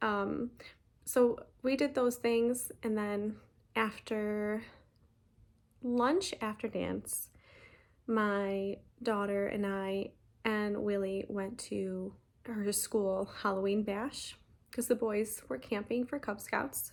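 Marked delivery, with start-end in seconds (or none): 1.0-4.6 slower, careful, slowed-down delivery. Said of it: "I'll try to slow down".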